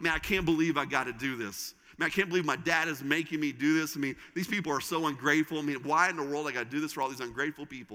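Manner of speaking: ordinary talk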